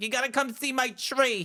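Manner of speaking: put-on Long Island accent. Retelling a video of a man dressed as his mother: imitating a Long Island mother. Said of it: "a guy dressed up as his mo-, mother".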